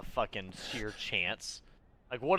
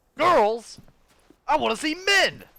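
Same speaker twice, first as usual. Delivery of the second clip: mock-proud put-on voice, much higher, louder, slower; 10 dB louder than usual. Redoing a quote after a weak first try, mock-proud, imitating Joshua. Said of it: "I had to say it proudly".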